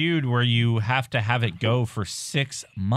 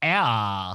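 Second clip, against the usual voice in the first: put-on teenage girl voice, lower-pitched; 3 semitones lower than usual. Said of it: "teenage girl voice".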